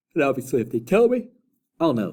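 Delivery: words stretched by yawning. Explaining a counting problem to viewers, yawning while talking. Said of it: "Sorry for yawning".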